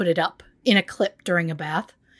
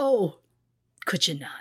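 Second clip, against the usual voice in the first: very quiet, meek, timid, soft-spoken little voice; 3 dB quieter than usual. Imagining the judge asking the pathologist not to say that again: imitating a very quiet judge. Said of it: "I just imagine a very quiet".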